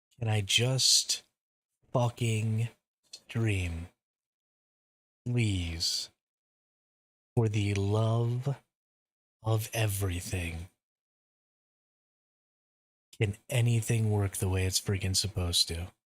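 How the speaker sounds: exasperated, fed-up, angry, frustrated outburst. Complaining about the game crashing again: angry and frustrated. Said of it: "I am so, so angry right now".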